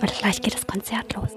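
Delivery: soft, hushed whisper. Just before a concert begins, speaking in a whisper. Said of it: "Ich flüster jetzt".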